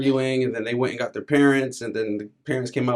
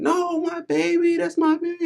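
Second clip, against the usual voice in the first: very high, stretched, drawn-out screaming cry. Retelling what a lady in the ER was heard saying: imitating a woman screaming. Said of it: "I heard some lady screaming".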